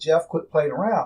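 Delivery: ordinary delivery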